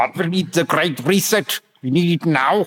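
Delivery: put-on German accent. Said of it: "your German accent was way better".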